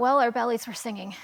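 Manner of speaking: ordinary talk, nothing marked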